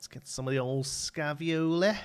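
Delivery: Liverpool Scouse accent. Announcing the next step of the work, in a Scouse accent. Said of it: "I have to say it in a Scouse accent".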